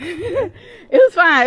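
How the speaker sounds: slow laughing, repeated.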